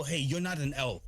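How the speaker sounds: usual speaking voice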